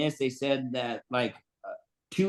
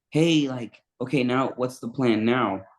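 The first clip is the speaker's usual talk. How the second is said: whispering. Retelling asking what the plan was once they found her: retelling a whisper. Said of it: "I started whispering".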